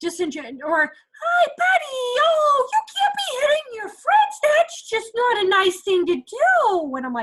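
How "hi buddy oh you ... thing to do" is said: very high, saccharine, sickly sweet fake-nice voice. Showing teachers an inauthentic adult correcting a child: mock sickly sweet voice. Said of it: "that sicky sweet voice".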